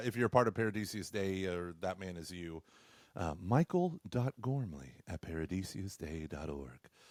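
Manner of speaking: soft, robotic announcer voice. Giving out contact email addresses to listeners, in a robot announcer voice. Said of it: "That was like my robot announcer voice".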